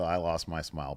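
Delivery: normal talking voice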